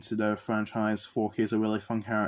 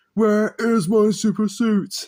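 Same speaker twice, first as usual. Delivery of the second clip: belted high, loud and slow; 11 semitones higher, 8 dB louder than usual. Discussing Pixar's The Incredibles, doing a quick bad Frozone impression. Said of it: "That was a terrible impression".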